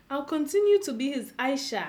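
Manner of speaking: ordinary talk, nothing marked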